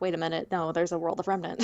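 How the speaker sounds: normal talking voice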